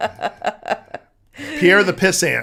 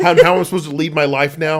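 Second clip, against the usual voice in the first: normal talking voice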